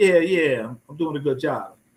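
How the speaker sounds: ironic, sarcastic, mocking tone. Recounting a sarcastic reply to a man who assumed the speaker was a porter.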